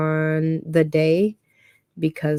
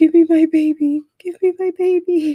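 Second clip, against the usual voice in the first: mock very high, slow, sobbing, pleading cry; 12 semitones higher, 6 dB louder than usual. Mother retells her daughter getting a shot, retelling a tearful plea. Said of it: "I started crying and I was like".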